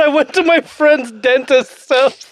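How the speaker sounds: slow, mocking, drawn-out delivery. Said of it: "you literally said".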